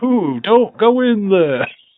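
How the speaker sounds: high, loud, slow moan. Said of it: "Him just coming out unscripted going".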